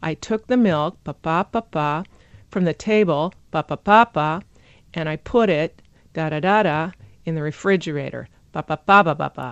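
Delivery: thought-group rhythm tapped out, stressed and reduced syllables marked. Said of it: "you get this effect of".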